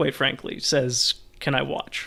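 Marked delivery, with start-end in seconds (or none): 1.4-2.1 very quiet, demure voice, quieter. Voicing a noblewoman asking to watch: very quiet and demure. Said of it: "she just very quietly and, like, as demure".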